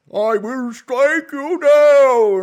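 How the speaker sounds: very high, very loud wizardly bellow, last word stretched. Playing God striking down a joker, the speaker does a Gandalf voice. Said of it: "that's just me doing Gandalf".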